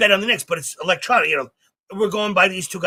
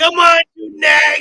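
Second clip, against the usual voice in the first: mock yell, higher and louder; 10 semitones higher, 8 dB louder than usual. Retelling again how a man sat yelling at horses on TV: imitating someone yelling at horses. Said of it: "He was just yelling at the fucking horses".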